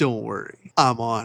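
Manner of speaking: slick, smooth, suave ladies'-man delivery. Retelling an anime scene where a man comforts a crying girl: imitating a suave man. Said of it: "a suave motherfucker walks up to her".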